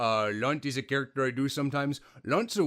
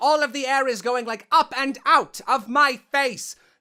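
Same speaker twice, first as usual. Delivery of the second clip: extremely nasal, pitched way up, loud; 11 semitones higher, 8 dB louder than usual. Describing a character's voice while doing it, in a Sierra Saxton voice. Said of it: "She's super nasal".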